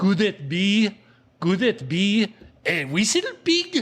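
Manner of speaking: put-on slow, heavy French accent. Retelling what a stranger on a mountain bike said: heavy french accent. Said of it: "in a very heavy French accent".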